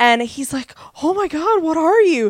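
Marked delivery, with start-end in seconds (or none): 1.0-2.3 high, loud, freaked-out cry. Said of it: "who's freaking out".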